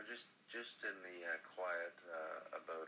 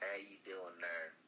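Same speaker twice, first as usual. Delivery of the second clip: put-on Southern rural country accent. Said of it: "you're from King of the Hill".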